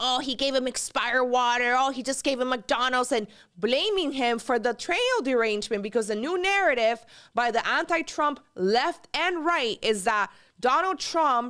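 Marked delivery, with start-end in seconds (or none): 0.0-3.1 put-on whiny, complaining voice. Act out Twitter complaints about Donald Trump, imitating Anomaly in a little whiny voice. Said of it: "with this little whiny voice complaining".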